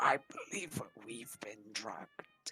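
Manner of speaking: speaking very quietly. A character invisibly goes over to a concerned friend, speaking very quietly. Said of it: "say uh very quietly".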